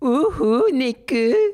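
very high, affectionate, fond teasing tone. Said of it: "affectionately says".

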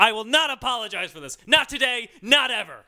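put-on loud, high, angry rant in American accent. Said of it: "the angry American".

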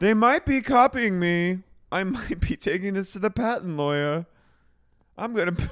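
very high, loud, shrill voice, near laughing. Speaker imitates a woman while trying not to laugh. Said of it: "I'm like imitating her".

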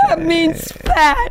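high, slow, wry delivery.

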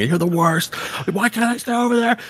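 mock, very high-pitched shouting. Recalling yelling at your mom to let you sleep over, retelling a yell. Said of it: "I was just yelling".

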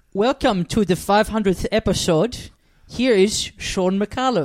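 clumsy, failed Dutch accent, spoken slowly. Performing a requested line in the Dutch accent once done for a role: bad Dutch accent. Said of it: "can I hear the accent?".

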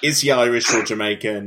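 ordinary delivery

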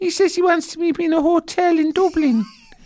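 put-on very high-pitched baby talk, babyish voice. Acting out how they talk to their Mammy, in a babyish voice. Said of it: "talking in a babyish voice".

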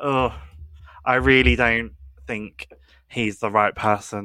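normal talking voice

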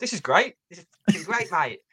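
play-acted, high, relentlessly upbeat and unshakeably positive cheer. Imitating a relentlessly positive fan as goals go in: imitating a cheerful fan. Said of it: "he was just like".

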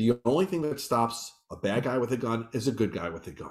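ordinary talk

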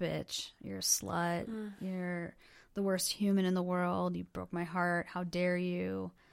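muttering under the breath. Retelling how a man drinking for hours called the speaker names, muttered under his breath. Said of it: "calling me names under his breath".

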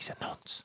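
hushed, barely voiced whisper. Retelling what he whispered to Moore as he went out, whispered. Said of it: "he just whispers to Moore as he goes out".

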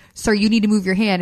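ordinary delivery

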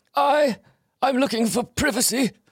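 very high falsetto character voice. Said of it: "the Teddy Perkins episode".

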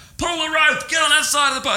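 mock skipper voice, shouting, pitched way up. Retelling a rough day on a boat, quoting the skipper's orders: retelling the skipper's yell. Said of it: "this skipper just started yelling at me".

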